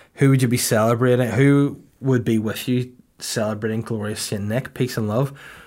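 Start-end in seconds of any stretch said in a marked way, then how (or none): none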